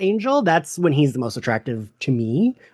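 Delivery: ordinary talk, nothing marked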